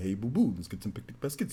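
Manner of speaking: quiet, low-pitched delivery. Explaining which cartoon voices need no yelling, giving an example: Yogi Bear voice. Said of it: "Yogi Bear".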